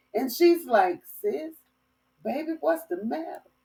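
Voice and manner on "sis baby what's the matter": soft, calm, easy, unbothered tone. Retelling a sister's reply during a siren scare: imitating sister's calm voice. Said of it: "In the calmness of her voice".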